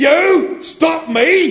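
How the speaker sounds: very loud, very high shrill roar. A tank answers the little robot Marvin, roaring. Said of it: "Roared the tank".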